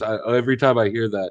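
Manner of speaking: ordinary delivery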